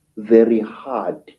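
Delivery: ordinary delivery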